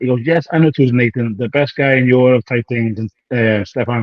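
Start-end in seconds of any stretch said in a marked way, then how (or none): none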